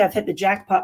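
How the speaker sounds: usual speaking voice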